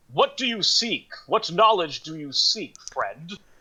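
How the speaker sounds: big, high-pitched character voice. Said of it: "booming voice again".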